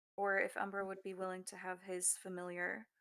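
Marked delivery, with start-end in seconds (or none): none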